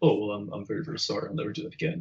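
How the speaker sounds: timid, soft, meek voice, near whisper. Retelling the yeller's sudden meek apology: imitating a soft-spoken apology. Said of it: "yelling to, um, just being like".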